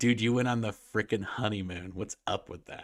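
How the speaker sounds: normal talking voice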